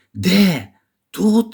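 high, called-out, cried-out exclaiming voice. Narrator reads Colin's reply to Mary, exclaimed. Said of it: "Вигукнув він".

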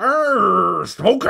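very high, rough, loud rasping shout, "Arr" stretched. Describing Jim Carrey's green Mask persona: imitating Jim Carrey as the Mask. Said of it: "when he goes all green and then he's just like".

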